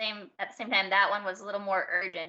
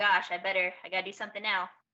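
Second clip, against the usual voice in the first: usual speaking voice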